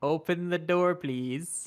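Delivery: slow, sugary-sweet, polite voice. Retelling how a woman asked to open the door, imitating someone very sweet. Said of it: "She says very sweetly".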